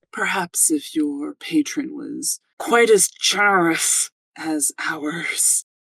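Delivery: through clenched teeth. A veiled woman answers the player's character, squinting: through gritted teeth. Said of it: "kind of through gritted teeth".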